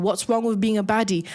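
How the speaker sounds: normal talking voice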